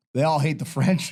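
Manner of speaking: ordinary talk, nothing marked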